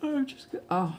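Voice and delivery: speaking through a yawn. Interrupting themselves mid-explanation, yawning. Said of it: "sorry, I'm yawning".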